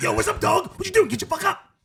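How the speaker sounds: wild, obnoxious voice pitched way up high. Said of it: "He's gonna be wild and obnoxious, like".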